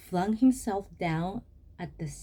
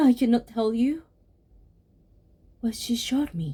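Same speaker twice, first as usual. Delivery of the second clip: loud, terrified panting and gasping; 3 semitones higher, 6 dB louder than usual. Narrator reading a story, a man telling a peddler what happened, terrified gasping. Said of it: "The last man who saw the Mujina was an old merchant of the Kyobashi quarter who died about 30 years ago. / The last man who saw the Mujina was an old merchant of the Kyobashi quarter who died about 30".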